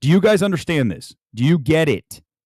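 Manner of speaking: ordinary talk, nothing marked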